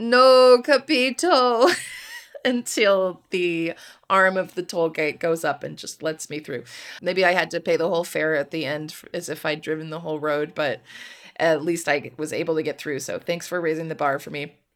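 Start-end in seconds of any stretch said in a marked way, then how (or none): 0.0-1.7 put-on loud, high, tearful, breaking-down wail. Retelling breaking down at a toll gate speaker, imitating a crying wail. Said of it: "start crying and wail".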